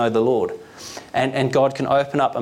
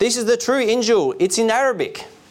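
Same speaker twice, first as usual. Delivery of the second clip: acted, delighted, very high gleeful shout; 9 semitones higher than usual. A bank manager shows the bible to his assistant and tellers, shouted gleefully. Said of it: "he shouted gleefully".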